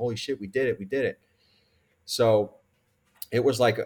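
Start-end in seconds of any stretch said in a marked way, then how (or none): 0.0-1.2 mock-crying with joy. Retelling the night his contract was signed, in the kitchen with his wife, retelling crying with joy. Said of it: "So I'm like crying in the kitchen with my wife".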